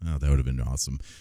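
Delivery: ordinary delivery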